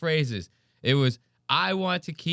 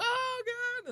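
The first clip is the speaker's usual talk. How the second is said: imitated hysterical squeal, higher and quieter; 6 dB quieter than usual. Showing own reaction to a very funny clip: imitating own hysterical squeal. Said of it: "I try to make it like I'm, like, a hysterical Puerto Rican".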